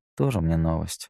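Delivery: ordinary delivery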